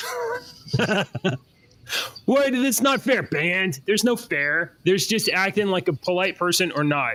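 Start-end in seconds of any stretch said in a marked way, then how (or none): 2.3-3.2 put-on high, whining child voice. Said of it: "they're like".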